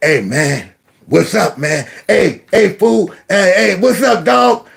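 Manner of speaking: mature grown man's voice. Retelling how Taji came into the room talking: Taji's grown man voice. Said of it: "had a grown man voice".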